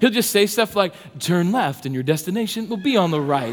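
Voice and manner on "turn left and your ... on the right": navigation system voice. Parent retelling how their four-year-old son does the GPS voice while driving, imitating a GPS voice. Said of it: "he even has the voice down for the GPS".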